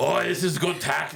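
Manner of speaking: slow, unhurried put-on Irish accent. Imitating Bill the Butcher promoting a bill: Irish accent imitating Bill the Butcher. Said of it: "I'm doing it now in an Irish accent".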